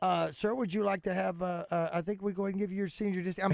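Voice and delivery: mock careful, hesitant, cautious voice. Retelling how a young clerk offered a senior discount: imitating a careful, hesitant clerk. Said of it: "they're careful 'cause they don't wanna insult somebody".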